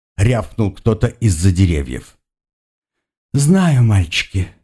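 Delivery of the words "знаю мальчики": softly and tenderly spoken. Narrator reading a woman's reply to men shouting from the trees, in a tender voice. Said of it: "нежным голосом произнесла она".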